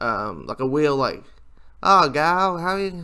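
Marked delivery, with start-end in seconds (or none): 1.9-3.0 loud, pitched-up put-on southern accent. Describing how Rogue talks in an X-Men movie: Rogue southern accent. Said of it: "Rogue has a southern accent".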